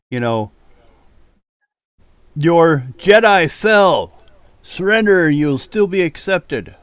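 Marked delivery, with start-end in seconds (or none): 2.3-6.6 full-on loud, rising yell. Voicing a character in a battle scene, yelling. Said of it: "He's yelling".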